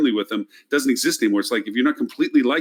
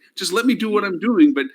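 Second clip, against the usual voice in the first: put-on scream, higher pitch; 9 semitones higher than usual. Retelling pleading with the company to keep marketing: imitating someone screaming. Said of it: "And I'm screaming at them".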